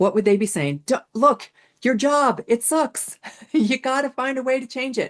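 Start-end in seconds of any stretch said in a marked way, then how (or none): 1.1-5.1 high-pitched scream at the top of the lungs. Speaker voices what the listener's soul pet would scream at them, imitating a pet screaming. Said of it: "screaming to you at the top of their lungs".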